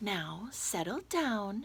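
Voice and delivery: sweetly spoken, calm teacher voice. A narrator reads a line to a misbehaving class, in a sweet voice. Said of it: "said Miss Nelson in a sweet voice".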